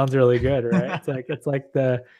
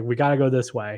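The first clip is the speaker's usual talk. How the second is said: put-on very confident voice, quieter; 3 dB quieter than usual. Telling a story, the speaker quotes the captain's answer, imitating his most sure voice. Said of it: "said in his most sure voice".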